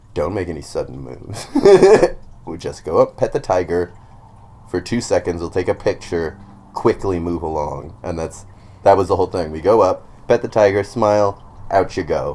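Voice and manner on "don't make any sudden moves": dead serious, deadpan. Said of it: "fucking dead serious being like".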